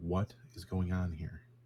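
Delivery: hushed, quiet voice. Questioning a pinned-down captive in character: speaking quietly. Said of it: "I'll quietly".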